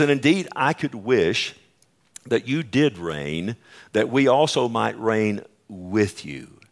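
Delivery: ordinary delivery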